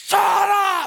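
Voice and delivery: acted, sudden, very high, snapped screaming outburst. Retelling snapping at her in the car while driving; retelling a scream. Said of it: "And I scream as we're driving".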